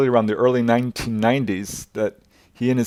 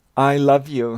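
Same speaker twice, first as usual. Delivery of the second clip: put-on sweet little girl voice, higher, slower; 3 semitones higher than usual. Retelling what the daughter said at that moment, in her sweet little voice. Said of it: "in her sweet little voice".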